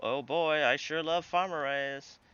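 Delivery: put-on cheer, plainly sarcastic fake enthusiasm. Heading toward a place while playing, sarcastic fake enthusiasm. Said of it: "This is sarcasm".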